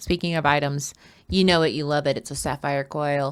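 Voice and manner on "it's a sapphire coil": play-acted, droning, lifeless, flat and sad monotone. Quoting what a woman said, imitating someone flat and sad. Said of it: "she says in a monotone, sad voice".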